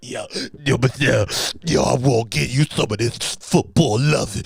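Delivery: ogre-like character voice. Retelling a story about Shannon Sharpe talking to a woman named Michelle, ogre voice. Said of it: "sounding like an ogre in the room".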